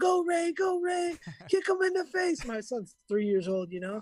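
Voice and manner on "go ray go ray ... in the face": shrill, high, stretched-out, drawn-out screaming. Retelling a three-year-old son cheering in the crowd: imitating someone screaming. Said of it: "He's screaming in the, uh, in the crowd".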